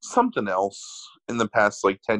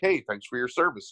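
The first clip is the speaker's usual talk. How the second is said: plain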